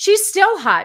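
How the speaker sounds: loud, high-pitched gushing.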